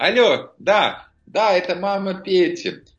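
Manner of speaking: bright loud cheerful tone.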